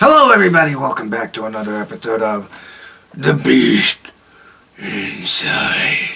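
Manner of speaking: very low, botched, bad demonic voice. Welcoming everybody back to another episode: horrible demon voice. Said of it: "I gotta really work on my demon voice".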